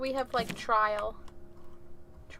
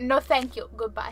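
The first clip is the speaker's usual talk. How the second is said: normal talking voice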